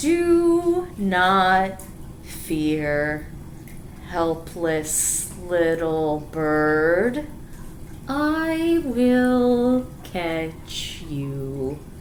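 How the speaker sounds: very slow, dragged-out slug voice, "do" drawn out. Reading a story where a slug speaks: very slow slug voice. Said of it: "Why is he talking so slowly? Because it's a slug".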